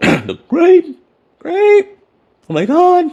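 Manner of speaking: voice cracking. Apologizing for burping after drinking a grape drink: voice cracking. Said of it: "My voice is cracking".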